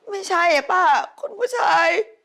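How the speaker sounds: words pushed out through tears, crying. In a drama, answering an older woman's question about the master of the house, crying. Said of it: "ร้องไห้ทำไมฮะร้องไห้ทำไมอีนี่".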